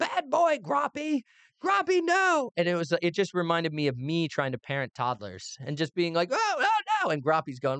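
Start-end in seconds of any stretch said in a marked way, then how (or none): 0.0-2.5 very slow, very high, drawn-out scolding yell. Recalling a scene where a man scolds groppy in the forest: retelling a yell. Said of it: "And him just like yelling like".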